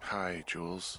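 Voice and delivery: sounding tired and weary. Answering a radio call after being woken up: sounding tired. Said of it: "you sound tired".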